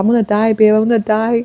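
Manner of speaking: put-on crying. Retelling bursting out crying in a private hospital room: retelling own crying. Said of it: "I just burst out crying".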